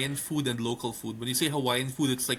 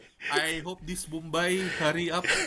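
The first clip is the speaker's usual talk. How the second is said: put-on Filipino accent, pitched higher; 4 semitones higher than usual. Retelling a stand-up bit by Russell Peters: imitating Russell Peters' Filipino accent. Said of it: "He does a Filipino accent".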